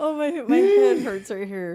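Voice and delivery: very high, very loud, shrill, laughing through the words. Recovering from a long laughing fit with another speaker: laughing while talking. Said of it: "hurt from laughing so hard".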